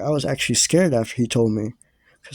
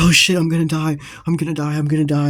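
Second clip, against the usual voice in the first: mock, frantic, flipping-out panic, repeated; 4 semitones higher than usual. Retelling rolling on the floor during a drug trip: imitating own panic. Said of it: "I start flipping out".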